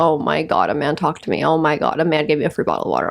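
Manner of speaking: low-voiced mock panic, fake-fearful alarm. Acting out a past reaction to a man at the gym giving free water, mock fearful panic. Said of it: "The entire time I was so fucking fearful".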